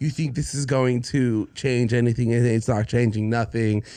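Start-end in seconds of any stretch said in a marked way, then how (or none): none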